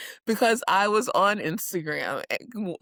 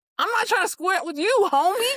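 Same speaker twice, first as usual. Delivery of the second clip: high, fast put-on street slang voice. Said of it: "And then Danny goes".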